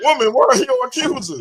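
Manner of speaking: very high, mocking, sarcastic tone. Retelling a scripture scene, acting out Jesus: sarcastic Jesus voice. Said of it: "he's sarcastic with".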